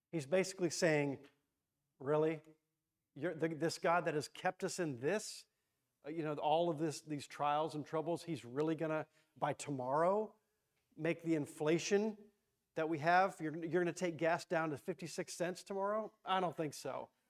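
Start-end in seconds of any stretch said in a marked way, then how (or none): none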